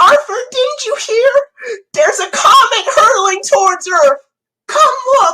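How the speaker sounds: very high, loud cartoon-style voice. Offering another impression, speaking as a cartoon character, in Buster Baxter voice. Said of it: "you know what other impressions I could do? ... that is Buster Baxter".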